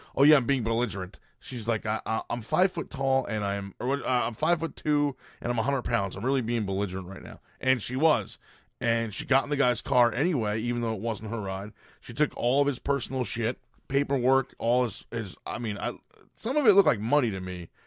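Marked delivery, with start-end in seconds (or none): none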